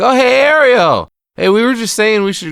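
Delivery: put-on acted, very loud, very high, shrill drunk man voice. Retelling a scene where Stan is drunk: imitating a drunk man. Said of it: "Stan's all drunk, and he's like".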